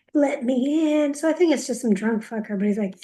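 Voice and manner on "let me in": imitated man yelling, pitched higher. Retelling a man heard outside the front door: imitating a man yelling. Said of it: "I hear all this yelling".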